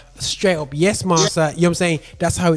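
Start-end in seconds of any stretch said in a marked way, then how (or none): none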